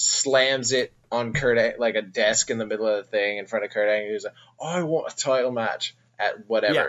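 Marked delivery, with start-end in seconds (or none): 4.6-6.7 bad, terrible fake British Irish accent. Acting out a man confronting Kurt Angle, in a terrible British Irish accent. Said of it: "That was a terrible British Irish accent".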